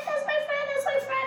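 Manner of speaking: very high, gushing squeal.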